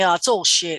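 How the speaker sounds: ordinary delivery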